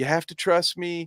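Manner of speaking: put-on childish whining voice. Commentator mimicking a woman in a clip, imitating her acting childish. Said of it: "acting like a fucking child".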